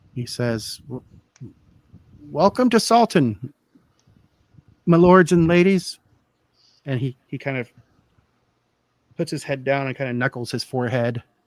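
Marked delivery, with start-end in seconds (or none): 2.2-6.0 put-on elderly fisherman's voice, raised and calling out. Storyteller voicing an older fisherman greeting the arriving strangers, old fisherman's voice. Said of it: "he's he's an older gentleman".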